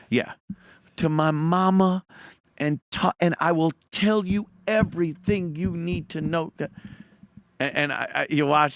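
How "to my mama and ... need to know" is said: put-on crying, tearful pleading tone. Retelling a suspect's confession in an interrogation, imitating someone crying. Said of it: "He's crying".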